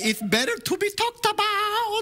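very high-pitched put-on Irish accent. Repeating your quote for someone who asked what you said, do Oscar Wilde in an Irish accent. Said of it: "That's the best Irish accent I can do".

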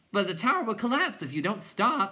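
screaming, pitched high. Reading a story, Bastian calls to the butterfly clowns; screaming. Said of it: "Bastian screamed".

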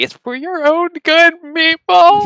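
very high, wailing, crying, tearful pleading voice. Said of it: "I'm, like, crying".

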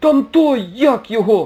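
very high, shrill shriek in hysterics. Narrator reads Bauli pointing at the window as gangsters approach, hysterical shouting. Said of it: "в істериці кричав Баулі".

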